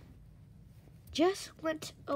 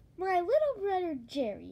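ordinary delivery

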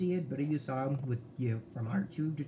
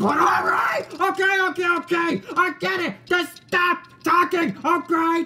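yelling, higher, louder, slower; 12 dB louder than usual. One character to another who keeps talking, yelling loudly. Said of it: "You're yelling so loud in my ear".

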